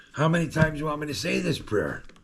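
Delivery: put-on snarky, irritated voice. Recalling being told to repeat a prayer, retelling own pissed sarcasm. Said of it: "Like I was being sarcastic because I was pissed".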